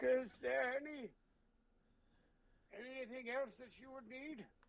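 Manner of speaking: put-on elderly man character voice. Voicing a character who suddenly looks old and hunched: voicing an old man. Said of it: "hunches and he moves a little slower".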